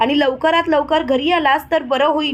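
ordinary delivery

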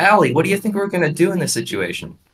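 very high-pitched voice starting way up high. An actor describing the character they voiced, Hunter's high-pitched voice. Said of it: "He starts his sentences very high pitched".

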